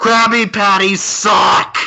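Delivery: loud yell, shouting. Declaring a character's action and yelling an insult: yelling. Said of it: "I yell at him".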